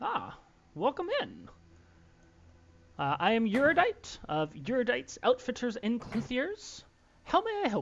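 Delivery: high, lilting, sing-song shopkeeper voice swooping upward. Voicing a short elven shopkeeper who greets the entering party: Eurodite the elven shopkeeper voice. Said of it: "he gets up and says".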